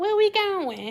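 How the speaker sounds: gentle, sweetened, soft put-on voice, pitched high. Speaker mimics women answering a man's trip offer: imitating a soft voice. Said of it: "Y'all know we get that soft voice".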